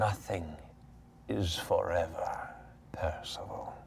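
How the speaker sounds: put-on warm, creaky, hushed grandmother voice, whispered. Narrating a scene, a disembodied voice speaks to Percival: creaky, warm grandmother voice. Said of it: "a creaky, warm, matronly voice that surrounds and almost welcomes you with the intonation of a grandmother".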